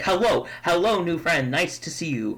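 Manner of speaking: thrilled, overjoyed, excited dog voice. Voicing a dog rushing over to greet a new friend: excited dog voice. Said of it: "he's so excited to see you".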